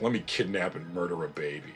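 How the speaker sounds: put-on cartoon villain voice. Mocking how a character is now written: Count Dooku as mustache-twirling villain. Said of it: "mustache twirling villain who's like".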